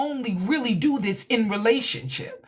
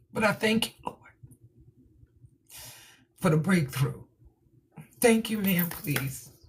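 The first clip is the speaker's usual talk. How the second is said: weeping, tearful voice, crying through words; 2 semitones lower, 3 dB quieter than usual. Thanking a caller for a breakthrough, crying while talking. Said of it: "I can't be crying on here".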